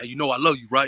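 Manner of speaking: plain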